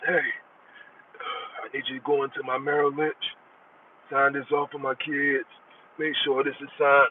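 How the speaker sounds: put-on deathbed voice. Acting out a request made from a dying bed: put-on voice of someone on their dying bed. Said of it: "making a voice".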